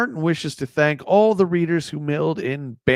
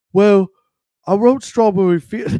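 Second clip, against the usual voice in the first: put-on Liverpool accent, higher pitch, loud; 5 semitones higher, 6 dB louder than usual. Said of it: "Paul's is like".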